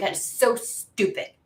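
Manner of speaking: put-on teen voice, slow and drawn out. Speaker voices the teenager she imagines reacting, in a teenage voice. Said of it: "I hear like a teenage voice going".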